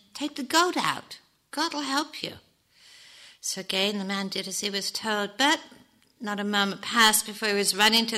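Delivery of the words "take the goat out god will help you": kind, mild, gentle, lightly lifted pitch. A rabbi answers a man who came running to him for help, gently. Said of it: "said the rabbi gently".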